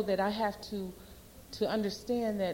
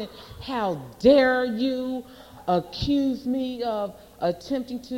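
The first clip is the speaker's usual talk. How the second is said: mock, loud, drawn-out indignant ranting and raving; 3 semitones higher, 7 dB louder than usual. Retelling an argument with a woman, acting out your own ranting and raving. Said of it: "I started ranting and raving".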